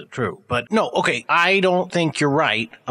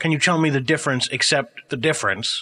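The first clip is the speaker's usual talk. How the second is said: normal talking voice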